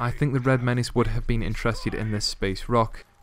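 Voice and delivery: plain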